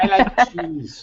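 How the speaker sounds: high, silly foreign-guy voice with foreign accent. Showing the silly voice he does for the dog, Andy Kaufman foreign guy voice. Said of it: "it's like an Andy Kaufman foreign guy voice".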